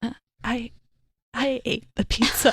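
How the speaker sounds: acted crying, high, words broken by tearful stammer. Retelling a reply given right after the family dog died, speaking through tears. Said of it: "And I like through tears".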